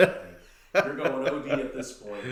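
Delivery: ordinary delivery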